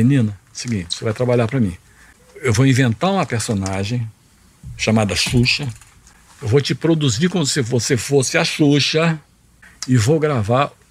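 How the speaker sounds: ordinary talk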